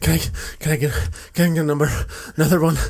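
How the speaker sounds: winded, panting, rushed, out-of-breath speech. Retelling a customer ordering more beer: imitating someone out of breath. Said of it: "he was always out of breath when he came to order more beer".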